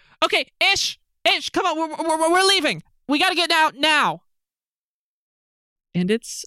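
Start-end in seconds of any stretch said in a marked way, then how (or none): 0.2-4.2 urgent shouting at a very high pitch. Narrating a game scene where a character calls to her companion, yelling. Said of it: "she's just yelling".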